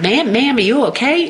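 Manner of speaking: put-on thick Southern accent. Retelling a country boy checking whether she is okay: thick southern accent. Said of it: "in this, like, deep Southern accent".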